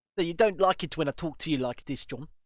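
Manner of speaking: mock, put-on South African accent. Teasing the other speaker who finds the accent annoying: put-on South African accent. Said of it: "The South African accent's quite funny".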